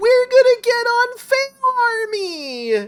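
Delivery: put-on very high, loud thrilled cry, "army" drawn out. Retelling what the person filming said after a stunt blew up: imitating a very excited voice. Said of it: "in the most excited voice".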